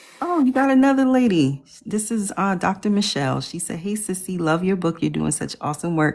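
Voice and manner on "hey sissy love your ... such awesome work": normal talking voice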